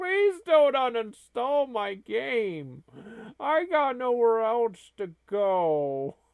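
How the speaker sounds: put-on sobbing kitty voice with swooping pitch. Voicing a pictured kitty in an imagined scene: mock crying kitty voice. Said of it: "And he's crying".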